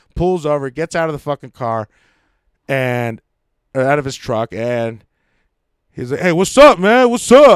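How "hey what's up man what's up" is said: put-on very high, very loud, drunken, confrontational yell. Retelling how a producer got out of his truck: imitating drunk, confrontational talk. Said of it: "all confrontational and drunk as a motherfucker".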